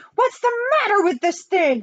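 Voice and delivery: shrill shout, very high pitched. The president, after throwing the phone across the room; shouted. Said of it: "Shouted the president".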